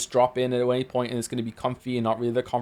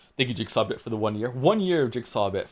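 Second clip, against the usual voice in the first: normal talking voice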